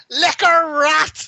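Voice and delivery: put-on very high shout in thickest Belfast accent. Retelling how Darren ran past a man's room and shouted in the door, in a very thick Belfast accent. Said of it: "in the thickest Belfast accent you've ever heard".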